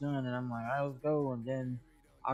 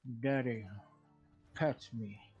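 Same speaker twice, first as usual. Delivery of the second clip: voiced as a pet cat; 3 semitones lower than usual. Retelling how the cat walks up while playing: voicing the pet cat. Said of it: "she come walking up to me and she's like".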